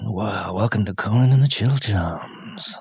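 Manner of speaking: put-on, low, sultry, sexy late-night jazz host voice. A podcast host opens the show in a sexy late-night jazz voice. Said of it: "That's your sexy voice?".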